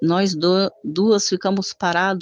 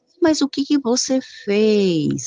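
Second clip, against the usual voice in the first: lazy, sluggish, slow dragging speech, fez drawn out; 4 semitones higher than usual. Retelling the father's reply while being begged for forgiveness, imitating slow sluggish speech. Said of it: "sabe com aquela lerdeza?".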